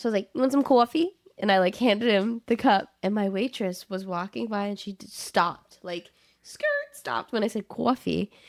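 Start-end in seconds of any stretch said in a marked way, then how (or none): 0.3-1.1 put-on loud, pitched-up New Jersey accent. Retelling offering someone coffee as a bit: put-on New Jersey accent. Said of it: "I just kinda talk in an accent".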